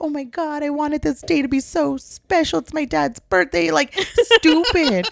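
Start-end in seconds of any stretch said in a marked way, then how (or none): 0.0-3.7 put-on high, tearful, weepy crying voice. Retelling own past words while crying: imitating own past crying. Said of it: "And I was crying".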